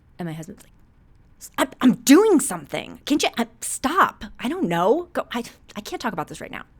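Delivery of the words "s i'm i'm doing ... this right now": very loud, flustered yelling at full blast. Acting out a hypothetical husband snapping about dinner: imitating husband yelling. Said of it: "Why are you yelling at me?".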